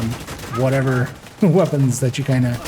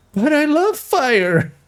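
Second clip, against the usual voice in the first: put-on very high, slow, drawn-out childlike yell; 14 semitones higher than usual. Imitating a game enemy's voice line when set on fire: imitating a childlike yell. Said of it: "just childlike almost voice".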